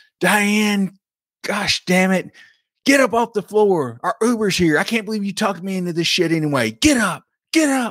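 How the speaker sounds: put-on shrill drunken screech, pitched way up. Retelling a phone call where a drunk friend screams at her friend: imitating a drunk friend screaming. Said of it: "she is screaming at her".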